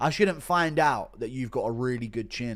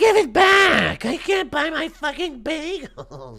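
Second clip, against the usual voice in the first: very high, very loud, drawn-out wail; 8 dB louder than usual. Impression of Ariel getting his lunch money stolen, Ariel impression. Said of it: "Impression of Ariel getting his lunch money stolen".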